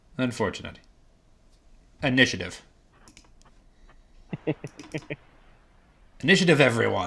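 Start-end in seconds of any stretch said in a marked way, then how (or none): 2.1-7.1 menacing villain voice. The player running a tabletop game calls for initiative: villainous voice. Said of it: "It's just a very villainous".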